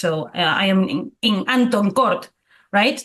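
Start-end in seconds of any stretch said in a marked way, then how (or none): 0.3-2.3 put-on slow Spanish-accented English, h sounds dropped. Quoting a woman who dropped her H's, Spanish accent, dropping the H. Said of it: "She wouldn't pronounce those H's like like sometimes Spanish people do ... like it sounds very Spanish".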